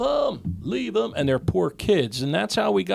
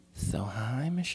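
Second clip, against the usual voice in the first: put-on girly voice, much quieter; 6 semitones lower, 9 dB quieter than usual. Asked to do a girl voice for prank calls, greeting someone in a put-on girl voice. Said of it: "Do your girl voice".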